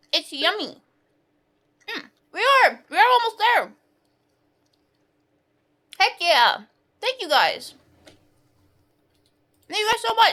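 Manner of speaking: talking with mouth full. Thanking chat during a charity stream, eating while talking. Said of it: "I am eating a hot dog".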